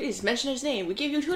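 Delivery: sudden put-on accent drifting into Southern. Playing a sponsor asking podcasters to pitch their product, sudden put-on accent.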